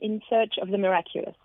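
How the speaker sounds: read with an English accent and pronunciation. Asked to pronounce an album's name, English accent. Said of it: "avec mon accent anglais".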